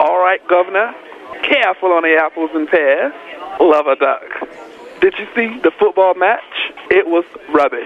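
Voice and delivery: put-on London Cockney accent. Showing the others how James used to talk, James's Cockney accent. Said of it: "James off of IHOP's Cockney accent".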